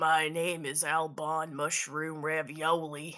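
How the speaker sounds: put-on slow, drawled Southern US accent. Voicing the angel again when asked for more words: Southern accent.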